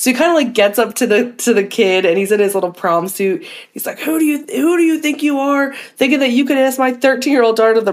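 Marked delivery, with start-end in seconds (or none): 4.0-7.8 mock-angry, acted pissed-off voice. Retelling how a father confronted the boy asking his daughter out, imitating someone pissed off. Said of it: "all pissed off".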